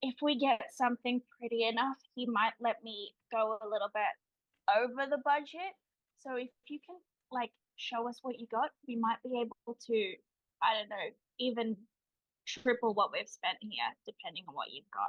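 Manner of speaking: conspiratorial stage whisper. A woman leans in to a seller she sees as a performer, stage whisper. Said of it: "like stage whispers to him".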